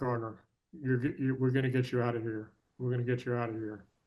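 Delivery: ordinary talk, nothing marked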